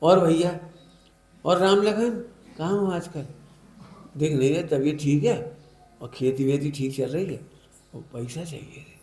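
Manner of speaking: lovingly sweet, sugary, honeyed put-on affectionate tone. Acting out how one talks to someone they need money from, put-on sweet affection. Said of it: "कैसे प्रेम से बोलती बता।".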